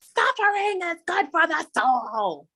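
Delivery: high, drawn-out screaming delivery. Retelling a scene where the Wicked Witch of the West screams: imitating a scream. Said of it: "she screams out".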